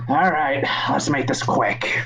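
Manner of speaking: put-on tired, weary old voice. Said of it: "he's like".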